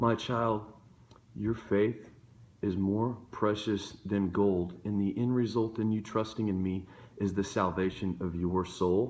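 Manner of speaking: low, hushed, still, small, tranquil voice. Speaker voicing God speaking to someone who has fallen, in a still small voice. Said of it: "God speaks to you in a still small voice".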